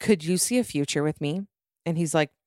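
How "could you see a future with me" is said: ordinary delivery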